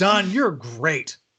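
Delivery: heavily ironic, sweetened, sarcastic, high-pitched. Complimenting Don during a board game: sarcastic. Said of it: "And sarcastically from Will".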